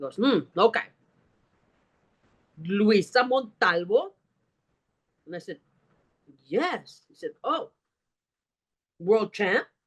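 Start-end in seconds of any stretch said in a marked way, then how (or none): 0.2-4.1 put-on heavy German accent, slower. Retelling a man who asks for the speaker's boarding pass, in a heavy German accent. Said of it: "he's got a very heavy German accent".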